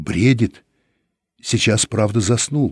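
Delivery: ordinary delivery, nothing marked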